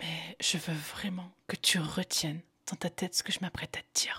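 speaking in a whisper. A podcast speaker addresses the listener directly to create closeness, whispering. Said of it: "je te parle en chuchotant".

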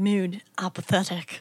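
badly done Scottish accent, voiceover style. Retelling a movie scene in a put-on voice: Sean Connery voice. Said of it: "Sean Connery's like".

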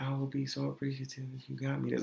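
play-acted, coaxing, sugary sweet-talking voice. Retelling how she asked them to pay at the counter: imitating sweet talking. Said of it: "Sweet talking".

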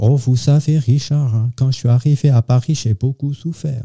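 put-on Alsatian accent. Speaker quoting a lady he was fond of, in a put-on Alsatian accent. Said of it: "qui ont l'accent alsacien".

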